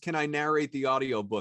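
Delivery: ordinary talk, nothing marked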